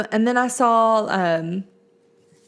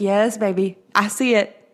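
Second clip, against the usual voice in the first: normal talking voice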